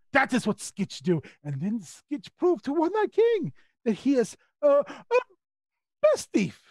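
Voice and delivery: boastful character voice in broken, article-free English. In a role-playing game, the player speaks as the thief Skitch: Skitch character voice. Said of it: "[name] not familiar with place you speak of. [name] come from oh, how to explain. [name] is gaining stripes to work in King with One Eye's court. He prove metal, make father very, very proud".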